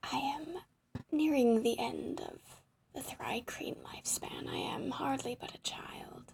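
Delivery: strange insect creature voice. Narrator voices a bug speaking inside the listeners' heads; bug creature voice. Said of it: "What does a bug sound like?".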